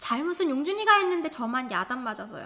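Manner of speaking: usual speaking voice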